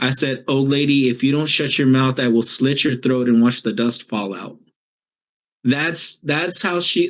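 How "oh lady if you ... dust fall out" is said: ordinary talk, nothing marked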